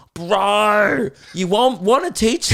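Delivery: put-on high, condescending child voice. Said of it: "says the most condescending shit to me".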